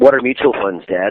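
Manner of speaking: dry, sarcastic, half-knowing tone, playing dumb. Retelling a reply to a father's question: retelling a sarcastic question. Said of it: "sarcastically kinda said".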